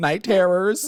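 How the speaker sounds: high, slow, giggly, laughing silly voice.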